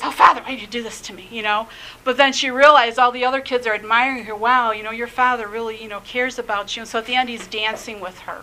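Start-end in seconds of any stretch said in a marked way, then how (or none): 0.0-1.3 acted embarrassed teenage voice. Retelling a movie where a father chaperones his daughter, playing her mock-embarrassed. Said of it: "she's like all embarrassed".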